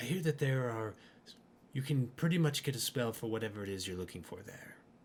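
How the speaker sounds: conspiratorial, sly, secretive tone. A character looks around conspiratorially before speaking, lowered conspiratorial voice. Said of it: "he kind of looks around a little conspiratoriously as he lowers his voice".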